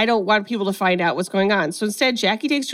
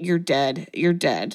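mock-muttered under breath, lower and slower; 5 semitones lower, 3 dB quieter than usual. Recapping a chase scene, the speaker quotes one woman's threat, retelling an under-breath mutter. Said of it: "under her breath".

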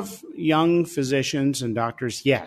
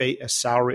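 plain

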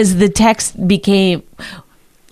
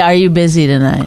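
ordinary talk, nothing marked

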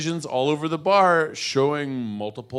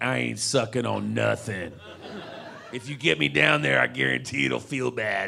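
mock tough straight guy voice, put on. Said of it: "It's there to be like".

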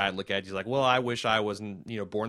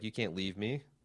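put-on angry voice, quieter; 7 dB quieter than usual. Retelling a scene where she is upset at being left: imitating someone angry. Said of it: "she's all pissed".

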